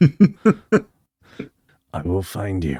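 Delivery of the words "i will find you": low, growling put-on voice. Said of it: "Mausoleum Neeson".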